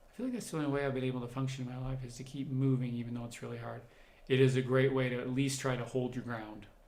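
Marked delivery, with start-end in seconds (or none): none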